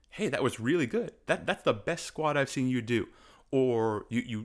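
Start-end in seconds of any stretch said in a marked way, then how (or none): none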